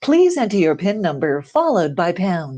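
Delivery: recorded, automated telephone system announcer voice. Showing what a recorded phone menu sounds like: telephone prompt voice. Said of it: "you hear somebody say something like".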